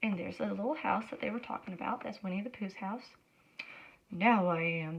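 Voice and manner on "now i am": gruff, low, growling voice. Narrator reading a Winnie the Pooh story, voicing a reply: growly voice. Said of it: "said a growly voice".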